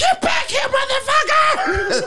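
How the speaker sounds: mock, very high, stretched-out, drawn-out screaming. Retelling how someone chased people down: imitating Megan screaming. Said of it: "Megan chased them down screaming".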